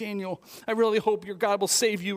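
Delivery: mock anguish, torn-up and hoping. Retelling the king speaking to Daniel before the lions' den: acting out anguish. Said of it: "he was in angst".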